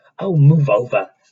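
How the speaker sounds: loud, high snarling voice. Reading a story aloud, a character pushes past: snarling. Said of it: "Hermione snarled".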